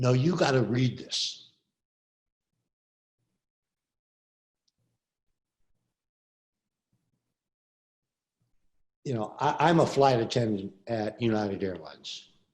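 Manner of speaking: choking up, voice catching with emotion. Reading aloud a grieving flight attendant's declaration: choking up with emotion. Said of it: "I'm gonna choke up again".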